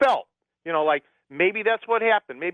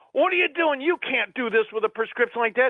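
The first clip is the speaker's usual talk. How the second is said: put-on angry yelling, much higher pitch; 5 semitones higher than usual. Retelling a pharmacist yelling at the speaker over a prescription, imitating a yell. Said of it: "he's yelling at me".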